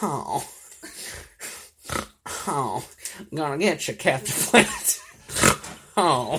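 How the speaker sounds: put-on voice, very slow, every word drawn out. Doing an impression for the others: Simon Greedley impression. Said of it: "this is my impression".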